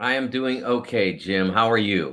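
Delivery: somewhat dispirited, slightly down tone. A guest answers the host's greeting on a sports show: sounding a little down. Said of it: "you sound a little down".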